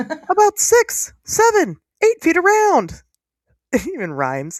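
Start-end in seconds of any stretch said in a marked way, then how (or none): 0.0-2.9 squeaked out high and slow. Host reads a quoted account aloud: Mickey Mouse voice. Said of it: "excited voice".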